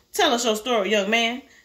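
plain

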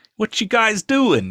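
put-on high, loud New York accent. Recalling a video impression of Patrick Troughton: Patrick Troughton as a New Yorker. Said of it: "I made him sound like some sort of New Yorker".

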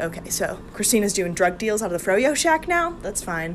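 ordinary delivery

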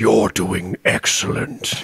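hushed, smooth, deep, breathy robot voice. Describing playing a game, voicing its announcer, Bejeweled smooth deep robot voice. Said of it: "like this deep voiced fucking robot being like".

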